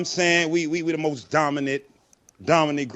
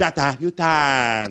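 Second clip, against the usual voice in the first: spoken with Chinese accent. Showing listeners how to say a nickname again, in a chinese accent. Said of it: "You gotta say it like that".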